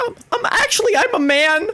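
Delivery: put-on very high voice like a boy in puberty. Showing a Dipper Pines-esque puberty boy voice: Dipper Pines voice. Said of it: "a sort of Dipper Pines-esque, like, puberty boy".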